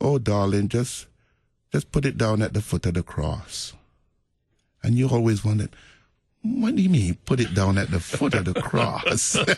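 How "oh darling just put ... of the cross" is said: put-on sweet Jamaican accent. Recalling a woman answering her worried friend, in a sweet jamaican accent. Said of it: "in that sweet Jamaican accent".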